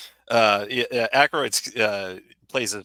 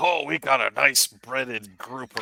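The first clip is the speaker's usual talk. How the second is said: bad, fake, put-on pirate accent; 4 semitones higher than usual. Imitating the man who runs the local bar and restaurant, bad pirate accent. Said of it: "doing like a bad pirate accent".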